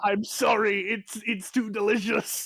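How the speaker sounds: high-pitched, very slow, drawn-out goblin shout. Voicing a fleeing goblin chased by a librarian: goblin shouting. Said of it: "he just shouts out".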